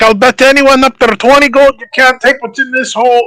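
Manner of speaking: high-pitched yelling. Voicing a character in a tabletop game, calling up to the players, shouting. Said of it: "Because he's shouting!".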